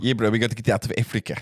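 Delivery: heavy put-on South African accent. Imitating an actor's heavy South African accent from Blood Diamond. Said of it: "that South African accent".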